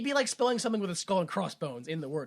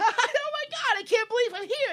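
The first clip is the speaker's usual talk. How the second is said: put-on overly happy host voice, much higher; 4 dB louder than usual. Describing a cat's infomercial cooking show, imitating an overly happy host. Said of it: "the overly happy host".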